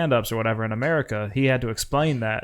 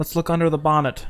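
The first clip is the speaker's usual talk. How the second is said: put-on British accent, much higher pitch; 5 semitones higher than usual. Playing with British words for car parts, in a British accent. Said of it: "British accent".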